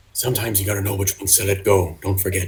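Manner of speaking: hushed, cool, barely audible half-whisper. Voicing a character warning another not to intervene: half-whispering. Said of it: "he's got a whisper".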